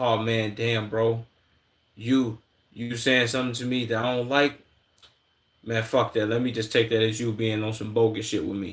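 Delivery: ordinary talk, nothing marked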